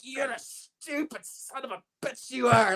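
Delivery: put-on angry tone. Retelling how he cursed out a referee while being choked in a match. Put on the angry cussing. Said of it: "I am cussing out the referee".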